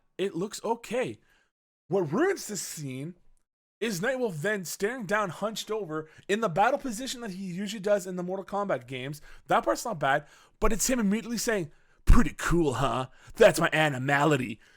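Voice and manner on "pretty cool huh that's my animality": cocky put-on voice, lower. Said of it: "how much of a cocky ass prick you sound like".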